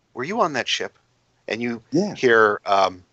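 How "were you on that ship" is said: assured, confident tone with slight tentativeness. Voicing a woman who was trying to hide herself: confident but slightly tentative. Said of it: "a confident woman, but slightly tentative".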